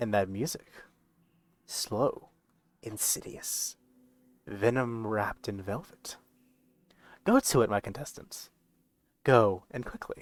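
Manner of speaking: soft, quiet, hushed voice. A game narrator voicing Halester addressing the contestants, in Halester's hushed tone. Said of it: "he says in like this hushed tone".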